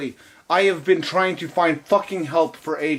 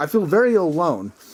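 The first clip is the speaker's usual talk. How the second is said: ordinary talk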